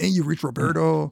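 put-on Mexican accent. Retelling a story's plot, voicing Roberto's voicemail greeting in a Mexican accent. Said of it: "This is my Mexican accent".

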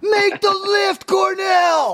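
very high, drawn-out, top-of-the-lungs screaming. Recalling the daughter yelling at the TV during a lift: retelling a scream. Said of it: "my daughter was like screaming at the top of her lungs".

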